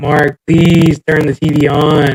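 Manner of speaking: crying, drawn way out, very slow, tearful. Retelling begging a friend to turn the tv on: retelling own crying plea. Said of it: "I'm crying, bro".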